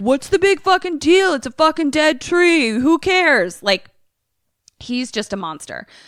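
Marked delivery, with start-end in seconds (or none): 0.0-3.6 high, loud, bratty whining outburst. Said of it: "And Mark is like".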